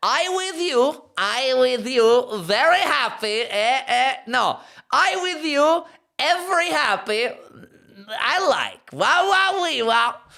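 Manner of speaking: Kazakh-style accented broken English. Reading aloud the phrase printed on baby trousers, in a Borat accent. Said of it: "that does work in a Borat accent".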